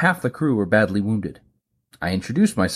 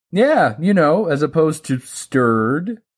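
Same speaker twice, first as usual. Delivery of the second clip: light, chuckling, pitched-up delivery; 7 semitones higher, 4 dB louder than usual. Explaining a joke to a puzzled listener, with a chuckle. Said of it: "I said with a chuckle".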